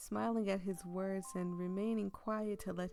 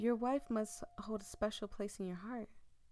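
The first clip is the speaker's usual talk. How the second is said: usual speaking voice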